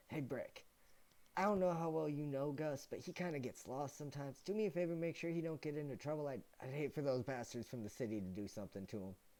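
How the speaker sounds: muttered aside. A game master's character leans over to another character, under his breath. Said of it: "under his breath to Brick goes".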